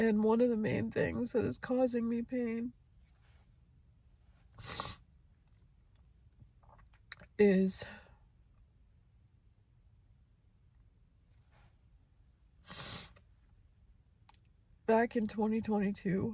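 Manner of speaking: tearful, crying speech. Letting out what causes the speaker pain, crying while talking. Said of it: "So here I am once again crying".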